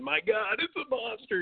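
slow, drawn-out, breathy whispered scream. Retelling seeing a big fish reach the surface while trolling: retelling own screaming. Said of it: "I'm literally screaming".

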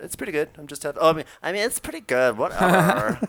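put-on high, loud Valley Girl voice. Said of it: "she pretends she's like, she's a, like, a Valley".

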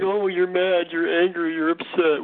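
mocking imitation. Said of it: "It's just like".

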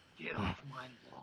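whispered, closed-mouth mutter with jaw clenched. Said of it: "the perfect Clint, Clint Eastwood impersonation".

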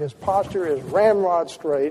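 ordinary delivery

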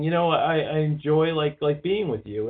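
ordinary talk

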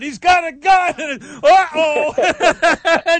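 loud, high shout.

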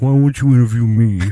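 whining, whiny put-on voice. Retelling a late-night text from Eric, imitating Eric's whiny voice. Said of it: "while you're doing that voice".

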